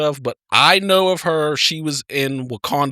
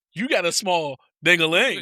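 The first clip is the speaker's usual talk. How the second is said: slow, deliberate, drawn-out jab; 3 semitones higher than usual. Retelling a wrestling segment, imitating The Hurricane. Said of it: "the Hurricane sitting there like".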